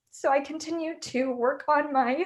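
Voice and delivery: high, tearful voice, crying through the words. Recounting cancer treatment during law school, the speaker speaks while crying. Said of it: "I'm sorry if I'm crying".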